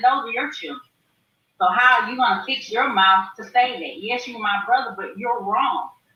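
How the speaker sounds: ordinary talk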